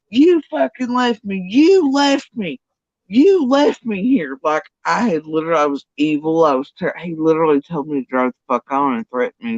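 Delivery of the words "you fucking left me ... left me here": play-acted, shrill, high, slow, drawn-out screaming. Retelling how an ex screamed at the store doors: imitating someone screaming. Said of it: "here he is screaming at the front doors".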